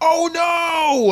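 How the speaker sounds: mock panic, high and loud screaming.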